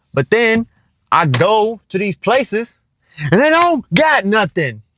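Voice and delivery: exasperated, very high-pitched, shrill, swooping frustrated yell. Vlogging to viewers while out looking for apartment decor, frustrated yelling. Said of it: "Sorry to have yelled in y'all's ear".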